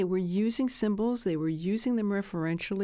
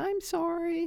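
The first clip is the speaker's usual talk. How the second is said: small, high, pitiful, pathetic little voice; 9 semitones higher than usual. Retelling how he apologized to deflect anger, imitating a pathetic little voice. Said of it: "he'd say it in this pathetic little voice".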